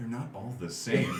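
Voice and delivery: earnest-sounding, sincere delivery laced with irony. Remarking on a hippo character type, with a sincere amount of irony. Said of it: "with a, a sincere amount of, uh, irony in my voice".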